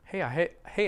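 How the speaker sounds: ordinary talk, nothing marked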